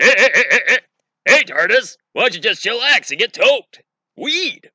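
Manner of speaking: high, loud, drawn-out delivery. Mocking a rumored American remake, Seth Rogen impression as the Doctor. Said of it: "have Seth Rogen play the Doctor".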